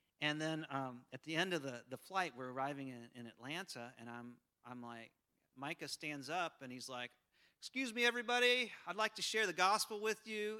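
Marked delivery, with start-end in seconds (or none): 7.6-10.6 acted-out loud, pitched-up yell. Retelling how Micah stood up at the end of a flight: imitating Micah yelling out. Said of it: "he just yelling out".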